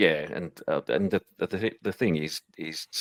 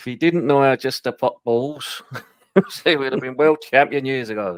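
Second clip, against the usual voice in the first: terrible put-on Sunderland accent, very loud and high; 9 semitones higher, 9 dB louder than usual. Retelling what his granddad said while they watched together on Saturdays, terrible Sunderland accent. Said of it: "in his Sunderland accent".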